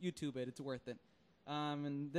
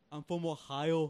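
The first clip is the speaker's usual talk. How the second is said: put-on thick Austrian accent, louder; 7 dB louder than usual. Joining the joke about an actor's accent: Schwarzenegger impression. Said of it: "he'll still have his accent".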